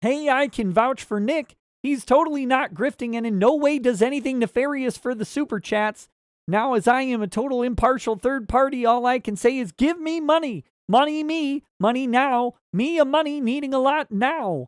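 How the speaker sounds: cartoon frog puppet voice. Streamer reads out a viewer's chat message, Kermit the Frog voice. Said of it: "Kermit the Frog says".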